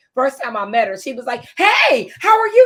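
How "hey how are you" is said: put-on very high, loud, drawn-out, come-on-strong energy. Introducing a teacher, recalling how she first greeted him; imitating an energetic greeting. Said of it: "She just came in strong".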